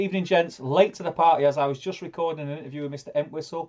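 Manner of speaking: usual speaking voice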